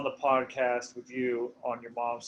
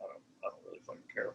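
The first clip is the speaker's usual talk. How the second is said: fast, whispered, under the breath. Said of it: "Sometimes I'm like".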